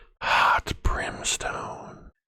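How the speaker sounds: whispering in character voice. Asked to whisper the line in their metadata voice, whispering. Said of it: "Can you do it in your metadata voice when you whisper?".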